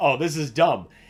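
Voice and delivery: laughing while talking. Retelling a reaction to a silly game line: retelling own laughing while talking. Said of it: "Just laughing like".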